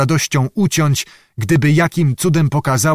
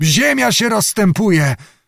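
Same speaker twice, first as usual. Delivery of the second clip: abrupt, sudden crying out, pitched up; 7 semitones higher than usual. A character cries out on hearing the enemy is coming after them; exclaiming. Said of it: "zawołał Zagłoba".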